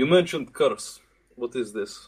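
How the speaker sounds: put-on complete Russian accent throughout. A character questions the chief, in a full russian accent. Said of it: "He says in a complete Russian accent".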